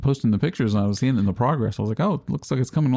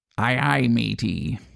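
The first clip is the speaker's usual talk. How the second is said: put-on very old, eighty-year-old pirate voice. Telling a pirate joke, speaking as the eighty-year-old pirate: eighty-year-old pirate voice. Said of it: "What does an eighty-year-old pirate say on his birthday?".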